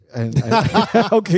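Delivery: high, slow laughing through words.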